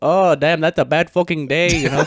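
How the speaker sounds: rough, put-on Vietnamese accent. Retelling what a woman said while recording a video: imitating a Vietnamese accent. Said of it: "Vietnamese accent that I can't do".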